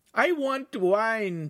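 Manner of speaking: shrill, high, squawking voice. A narrator reads the Signora's line at the master's table, squawking. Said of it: "the Signora squawked".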